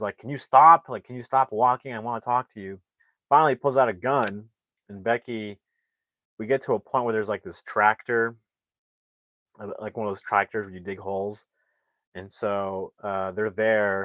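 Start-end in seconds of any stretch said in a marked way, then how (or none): 0.2-2.8 loud, fed-up, angry, acted-out delivery. Retelling a film scene where a man chases a girl: imitating an angry man. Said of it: "and is pissed".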